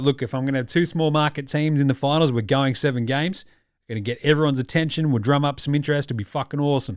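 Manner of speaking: ordinary talk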